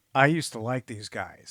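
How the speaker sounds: normal talking voice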